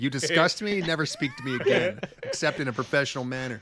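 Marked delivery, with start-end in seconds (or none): none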